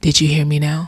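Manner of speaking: soft, quiet voice. Retelling an experience, the speaker quotes words spoken quietly in their ear: quiet voice. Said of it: "And quietly in my ear".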